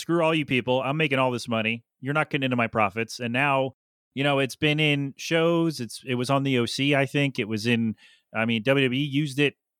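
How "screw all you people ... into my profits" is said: normal talking voice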